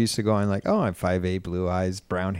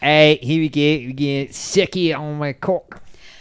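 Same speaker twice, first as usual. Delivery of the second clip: put-on accent turning British at the end; 6 semitones higher than usual. Quoting a guy from a story, accent turning British at the end. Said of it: "it went British at the end".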